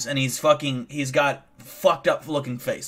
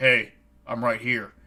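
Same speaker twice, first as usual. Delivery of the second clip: deep, low-pitched man's voice calling out; 3 semitones lower than usual. Retelling a stranger in a tree calling out: imitating a deep, loud voice. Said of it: "and it was deep".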